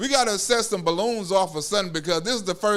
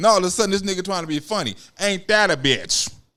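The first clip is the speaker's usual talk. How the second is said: ordinary talk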